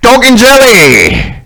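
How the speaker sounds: put-on very high, loud old man voice, "jelly" drawn out. Voicing an old man held in place by paladins: old man character voice. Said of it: "And he's just like".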